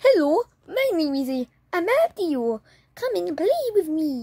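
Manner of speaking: sock puppet voice. Showing others a homemade sock puppet and speaking for it: sock puppet voice. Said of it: "Let me try to speak it".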